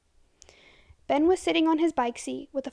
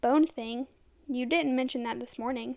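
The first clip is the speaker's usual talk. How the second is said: plain reading voice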